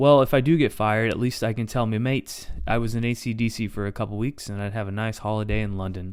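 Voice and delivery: ordinary talk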